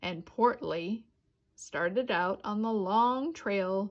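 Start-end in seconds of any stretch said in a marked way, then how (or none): none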